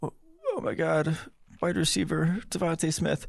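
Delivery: very high, overexcited football fan voice. Imitating Eagles fans reacting to a wide receiver pick: imitating Eagles fans. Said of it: "Eagles fans would be like".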